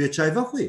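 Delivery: "tu es çay vexwî" said with question intonation. Teaching Kurmanji questions made by intonation: question intonation. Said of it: "Eğer sen buna bunu vurguyla yaparsan".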